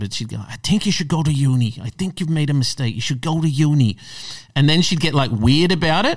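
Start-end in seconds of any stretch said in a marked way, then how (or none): 0.4-4.0 nagging tone in a put-on Irish accent. Retelling what a woman kept saying when she rang up, imitating her Irish accent. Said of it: "I hate doing her accent".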